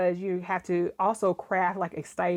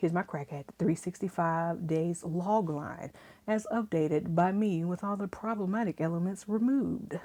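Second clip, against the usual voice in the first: playful, sultry, put-on sexy voice; 4 dB quieter than usual. Reading out a rewritten log line in a put-on sexy voice. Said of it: "I'm putting on my sexy voice again".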